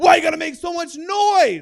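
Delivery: very loud, high, frantic freaking-out voice. Retelling how the Uber driver reacted to the noise, imitating someone freaking out. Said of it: "He freaks out like".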